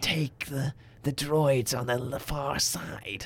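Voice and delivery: fake whispering voice. Comparing how the clone characters sound, a speaker quotes a hushed, whispery Crosshair voice. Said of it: "even more hushed and whispery".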